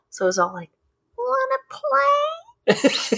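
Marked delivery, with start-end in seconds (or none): 1.1-3.1 very high, ringing, swooping bell-like elf voice. Retelling a story, speaker voices a little elf talking to a kid: high bell-like elf voice. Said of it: "the elf had a high-pitched voice like a bell".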